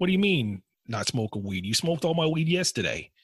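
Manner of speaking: put-on Boston accent. Retelling a spoof commercial, quoting the man from Boston: imitating a Boston accent. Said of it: "and the guy's from Boston".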